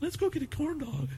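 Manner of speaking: very high, teasing mock voice. Doing an impression of the other speaker: imitating the other speaker. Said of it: "My fucking impression of you is just spot on".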